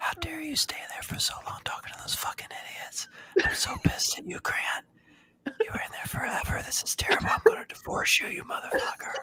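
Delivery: angry whispered rant, close and soft, ASMR-style. Asked to perform it, doing an ASMR impression of Grant's wife. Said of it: "A S M R impression of Grant's wife".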